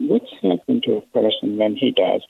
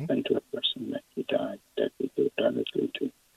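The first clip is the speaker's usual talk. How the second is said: quiet, soft, hushed library voice. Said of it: "Is it possible to speak louder?".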